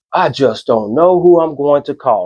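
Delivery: ordinary talk, nothing marked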